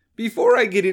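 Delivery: voice breaking and cracking mid-phrase. Speaker starts a new point and the voice suddenly cracks, voice cracking. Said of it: "did my voice just crack?".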